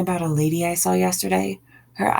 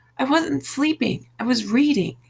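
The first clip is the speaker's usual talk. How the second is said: high-pitched yelling with the voice raised; 6 semitones higher than usual. Answering a question about sleeping on the couch, shouting. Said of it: "You don't have to shout".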